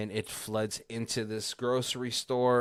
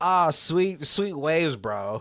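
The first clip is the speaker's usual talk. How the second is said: put-on loud, high Australian surfer voice; 6 semitones higher, 7 dB louder than usual. Retelling a story, quoting the lone Australian at the ocean, imitating an Australian accent. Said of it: "there's one Australian. He's like".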